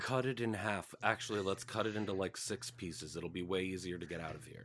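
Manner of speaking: whispered character voice. Player speaks in character during a game: whispering in character. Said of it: "this is like you whispering though".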